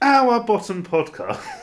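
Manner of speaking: very high, very loud laughter through the words. Asked by a co-host to say the podcast address again, laughing while talking. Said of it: "you started laughing halfway".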